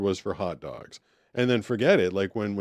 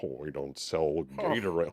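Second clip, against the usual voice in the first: put-on snotty, bratty, dismissive kid voice; 6 semitones lower, 5 dB quieter than usual. Retelling what the store's kid said about gatorade: imitating a snotty kid. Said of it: "snotty kid".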